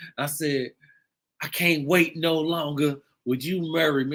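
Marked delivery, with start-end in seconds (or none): 1.4-4.2 mock tearful crying voice. Retelling proposing on one knee: imitating own crying while proposing. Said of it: "And I'm crying".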